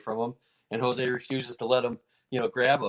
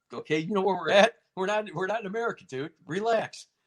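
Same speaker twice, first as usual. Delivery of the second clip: raised, pitched-up hollering yell; 8 semitones higher than usual. Retelling yelling at a fighter to calm down: retelling a yell. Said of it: "we're yelling".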